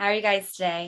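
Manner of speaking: raspy, hoarse voice. Greeting two guests while under the weather: raspy voice. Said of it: "This is so raspy".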